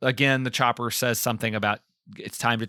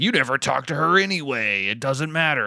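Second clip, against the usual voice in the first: strange, processed-sounding, pitched-down villain voice. Recapping a scene where the chopper throws shade at Johnny: Freddy voice. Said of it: "I'm giving him the Freddy voice".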